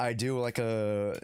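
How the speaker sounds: ordinary delivery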